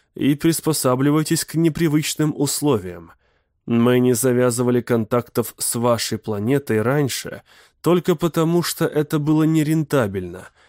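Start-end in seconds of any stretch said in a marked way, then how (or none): none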